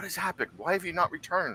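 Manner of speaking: soft half-whisper under the breath. Narrating a scene, voicing Jess hurrying over to the player: Jess half-whispering. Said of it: "She like whispers".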